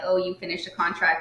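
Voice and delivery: plain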